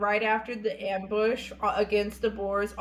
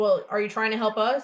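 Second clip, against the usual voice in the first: usual speaking voice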